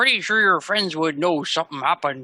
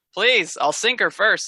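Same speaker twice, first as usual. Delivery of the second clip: dismissive, laughing delivery with raised pitch; 5 semitones higher than usual. Narrating a game scene, Pike answers the boat's owner, laughing it off. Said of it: "Pike just laughs it off".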